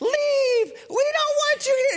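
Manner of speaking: mock screaming. Recounting a confrontation where someone screamed and cursed at the speaker to leave, acting out that outburst, imitating someone screaming. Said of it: "she's yelling".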